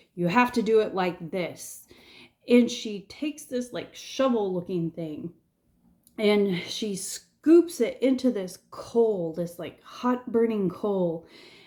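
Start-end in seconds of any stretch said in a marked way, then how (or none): 0.2-1.9 severe, no-nonsense, very stern and commanding. Retell how she answered when you told her you didn't know what to do, imitating a very stern voice. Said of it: "in this very stern voice".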